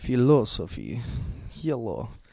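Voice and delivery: Russian-accented voice. Discussing the word philosophy with another speaker, going back to a Russian accent. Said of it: "going back to my Russian accent".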